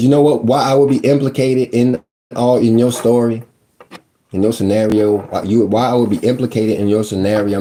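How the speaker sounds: ordinary talk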